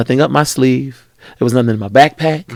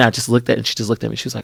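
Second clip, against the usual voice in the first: normal talking voice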